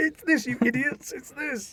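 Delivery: very high, shrill, screaming yell. Host imagines listeners yelling answers at the hosts, imitating screaming listeners. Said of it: "are screaming".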